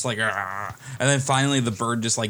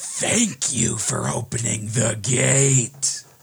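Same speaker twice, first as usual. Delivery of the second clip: villainous character voice. Narrating to players fleeing explosions, a voice from below speaks: booming voice. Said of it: "a booming voice".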